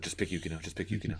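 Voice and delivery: mock whispering, hushed. Retelling how she whispered the answer to Usagi: imitating a whisper. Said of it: "whispering to Usagi".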